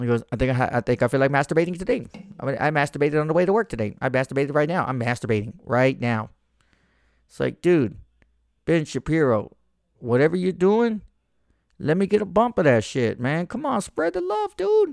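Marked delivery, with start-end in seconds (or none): 0.3-6.3 put-on fast-talker voice, sped up. Wondering how he talks so fast, do a fast-talking Ben Shapiro impression. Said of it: "How does that dude Ben Shapiro talk so fucking fast".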